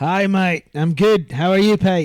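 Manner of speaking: put-on Australian accent. Greeting the other speaker back in a put-on Australian accent. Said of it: "I'm loving that accent".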